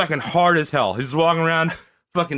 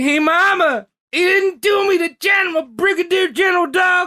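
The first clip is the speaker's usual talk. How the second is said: very high-pitched, whiny pleading tone; 14 semitones higher, 4 dB louder than usual. Acting out a man's letter home to his mom, imitating someone whining. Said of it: "That was him whining".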